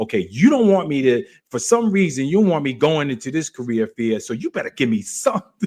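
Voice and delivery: blunt, straight-talking, demanding delivery. Recalling talking to God in his car, speaker retells demanding talk to God. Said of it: "I was talking like that".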